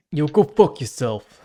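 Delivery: put-on loud Brooklyn accent. Speaker acting out the reply he'd send a spam recruiter, in a Brooklyn accent. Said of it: "Asterix Brooklyn accent or something like that".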